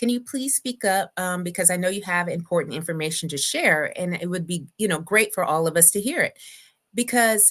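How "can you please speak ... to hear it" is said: ordinary delivery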